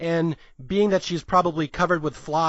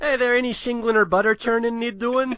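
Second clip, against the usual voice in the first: fake Irish accent, higher pitch; 7 semitones higher, 3 dB louder than usual. Quoting a movie character faking an irish accent: put-on irish accent. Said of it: "I really hope that Irish accent was passable".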